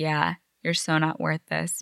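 normal talking voice

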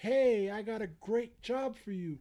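high, loud, excited screaming pitch.

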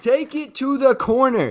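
loud, high-pitched yelling.

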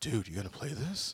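keen, worked-up, eager, excited, acted. Retelling a buddy's message about a new game: imitating Adam, excited. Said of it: "I can just hear him in my head".

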